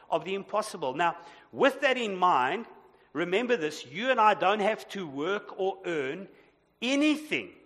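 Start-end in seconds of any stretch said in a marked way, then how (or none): none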